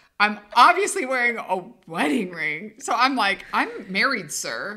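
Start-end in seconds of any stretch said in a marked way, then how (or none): 3.5-4.8 put-on businesslike, very official, formal tone. Retelling a reply to the clerk's request: imitating a very official tone. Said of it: "very official".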